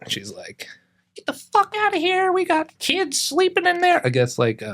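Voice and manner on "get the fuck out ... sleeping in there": acted frantic freaking-out voice, very high. Retelling how a lady came out to chase skaters off: imitating a woman freaking out. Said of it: "this lady comes out freaking out".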